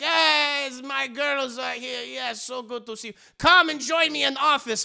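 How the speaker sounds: over-the-top fake French accent. Quoting what the french lady said, in a fake french accent. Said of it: "she's got like this French accent uh, that that sounds very very fake".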